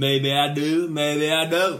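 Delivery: put-on American accent. Describing a fringe player doing impressions of American people, Matthew McConaughey impression. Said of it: "He just did impressions of American people".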